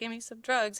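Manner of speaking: put-on druggy guy voice. Retelling a funny movie scene, imitating a druggy guy. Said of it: "the freaking druggy guy that's all like".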